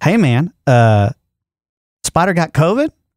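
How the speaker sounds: slow, drawn-out, distinct character voice. Reading out a text from Clark in his voice: Clark voice. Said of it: "I'm gonna read it in his voice".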